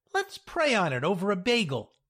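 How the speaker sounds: ordinary delivery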